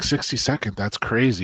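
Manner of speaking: normal talking voice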